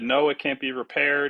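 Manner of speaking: plain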